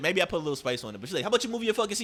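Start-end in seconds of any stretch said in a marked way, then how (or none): 1.2-2.0 put-on rude, hostile tone, higher. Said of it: "She said bitch with her energy".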